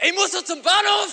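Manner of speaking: very high, shrill, loud shout. Speaker retells a driver calling to them from a car, shouting out a car window. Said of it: "brüllt raus".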